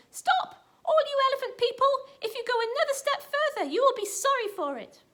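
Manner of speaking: shrill, squeaky, very high monkey voice. Narrating a story, the little monkey calls out to the elephants, squeaky little monkey voice. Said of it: "He said in his squeaky voice".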